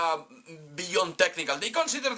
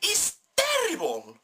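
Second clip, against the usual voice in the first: shrill, very high, screechy outburst; 12 semitones higher than usual. Speaker complaining about a film, suddenly going screechy. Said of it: "I just got screechy right there".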